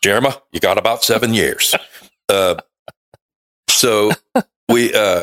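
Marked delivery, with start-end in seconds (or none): 0.0-1.7 put-on Southern accent, words drawled. Imitating someone who told them they had seven years: imitating a Southern accent. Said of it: "He's so Southern".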